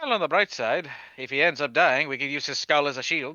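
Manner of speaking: soft, quiet put-on Irish accent. Trying a line again, saying it quietly with a sort of Irish accent. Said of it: "try to say this quietly with an Irish sort of accent".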